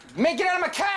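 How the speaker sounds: very high, shrill yell in dumb-sounding Jersey accent. Imagining Batman yelling at everybody while playing the game, stupid Jersey accent Batman. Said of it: "he had like a Jersey stupid accent".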